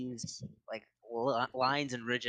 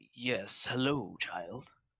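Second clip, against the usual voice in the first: voice of a talking tree. Voicing a tree that lowers its branches to greet someone: talking tree voice. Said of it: "looks down at you and goes".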